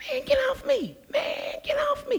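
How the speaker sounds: very high, very soft protesting tone. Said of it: "[name] got that high voice".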